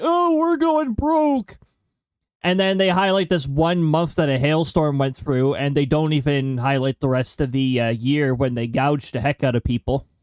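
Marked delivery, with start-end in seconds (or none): 0.0-1.6 very high, drawn-out, whiny complaining voice. Imitating insurance companies: imitating whiny complaining. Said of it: "whiny insurance companies saying".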